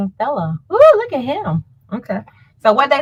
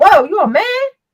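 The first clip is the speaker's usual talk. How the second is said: high, loud, sudden startled exclamation. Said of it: "And he was like".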